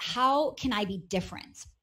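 usual speaking voice

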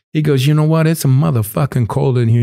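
put-on Italian accent. Telling a story about a man in a shared space, acting out what he said to the speaker. Imitating an Italian accent. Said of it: "he's got an Italian accent".

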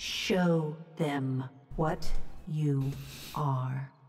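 slow, bell-like chiming voice. A narrator voices a familiar woman heard through the din, slow, bell-like chiming voice. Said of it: "Each word comes slowly".

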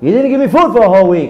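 high-pitched, urgent, soul-deep scream.

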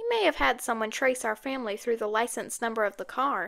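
usual speaking voice

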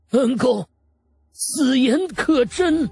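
trembling voice. Narrator reads an old man kneeling in tears before Wang Lin, in a trembling voice. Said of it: "颤声道".

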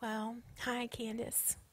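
soft, hushed, saccharine fake sweetness. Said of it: "talks like this".

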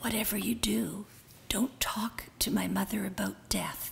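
soft, unvoiced stage whisper.

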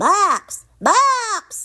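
very high shout, name stretched long. Froggy bangs on the door at Max's and calls out, shouting. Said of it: "he shouted".

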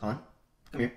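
mock sharp-edged, smart, pointed but even tone. Retelling how mom called a name after reading a report card: imitating mom's smart tone. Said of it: "a smart tone, not like, not, like, mad".

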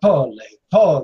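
put-on in an Italian accent. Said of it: "I'm saying it with an Italian accent".

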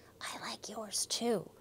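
soft, hushed whisper. A girl in class answers her classmate's compliment, whispering. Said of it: "whispered Ruby".

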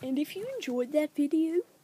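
whispered put-on character voice.

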